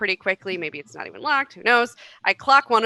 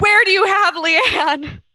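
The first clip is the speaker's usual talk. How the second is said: mock yelling, very high, shrill and loud; 11 semitones higher, 5 dB louder than usual. Playing a character pinning a man behind a door, yelling a demand at him. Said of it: "And I'm yelling".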